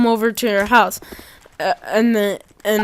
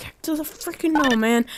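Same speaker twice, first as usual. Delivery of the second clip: urgent, high, hushed shouted whisper-scream; 5 semitones higher, 5 dB quieter than usual. Retelling what the speaker whisper-screamed at a man in the moment: whisper screaming. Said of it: "I'm like whisper screaming".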